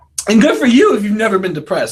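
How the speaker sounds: voice cracking. Livestreaming to viewers about mood disorders and depression: voice cracking. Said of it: "Do you hear my voice crack?".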